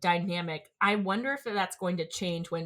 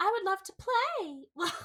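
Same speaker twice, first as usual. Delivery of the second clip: put-on child's voice, higher; 13 semitones higher than usual. Imitating how a creepy child sounds in the dub: imitating the dub's child voice. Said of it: "it's like me trying to do a child's voice".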